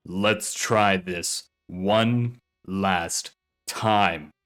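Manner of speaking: low, deep, contemptuous, sneering menace. A shadowy figure speaks to the gagged Dietrich, in a deep sneering voice. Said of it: "the deep voice sneered".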